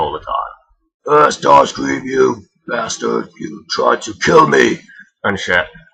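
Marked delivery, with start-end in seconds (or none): 1.1-4.8 higher, slow, pissed-off warlord voice. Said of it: "why Megatron was so pissed at him".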